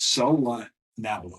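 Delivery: ordinary delivery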